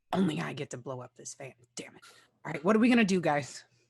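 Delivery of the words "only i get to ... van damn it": low, muttered under the breath. Speaking to a fellow player during the game, muttering under breath. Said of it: "I say under my breath to Nathan".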